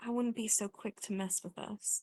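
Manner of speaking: hushed whisper. A player has their character put a hand on a wounded foe's shoulder, whispering. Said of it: "whisper like".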